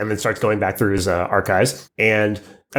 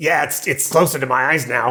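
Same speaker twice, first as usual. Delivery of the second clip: little goblin character voice; 4 semitones higher than usual. Speaking as the goblin after someone asks it directly, in a goblin character voice. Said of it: "he just like opens his eyes really wide and he goes".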